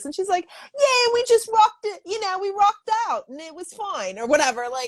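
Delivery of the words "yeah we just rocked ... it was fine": put-on Australian accent, very high. Retelling a music teacher's travel stories in her Australian accent. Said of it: "in her Australian accent".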